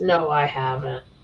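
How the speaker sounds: put-on half-asleep voice. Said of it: "You sound like you're half asleep".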